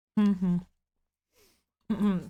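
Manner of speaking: snacking while talking. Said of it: "I'm snacking".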